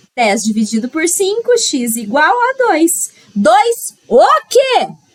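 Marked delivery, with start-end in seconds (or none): 3.4-4.9 loud, high-pitched shout. A teacher working through a rule-of-three problem for students, loud shout. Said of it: "Para de gritar".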